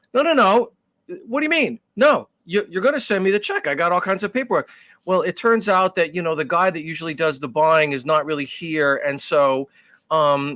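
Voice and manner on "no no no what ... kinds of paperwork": real but restrained yelling, raised and pitched up. Retelling a phone call with a car buyer, retelling his own yelling. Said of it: "crazy yelling".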